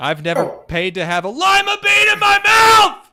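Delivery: shrieking, very high, very loud. Telling a joke and screaming the punchline: mock screamed punchline. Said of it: "Was that funnier the way I did that?".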